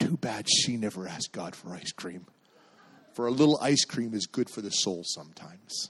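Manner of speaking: soft, theatrical stage whisper. A parent retells their son's added remark after a prayer, in a theatrical whisper. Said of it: "in a theatrical whisper".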